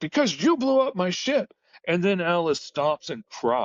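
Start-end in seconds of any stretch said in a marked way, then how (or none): 0.0-1.5 piercing, very high, shrill scream. Retelling a scene where Hook screams back at Alice: imitating Hook screaming. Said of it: "Hook screams back".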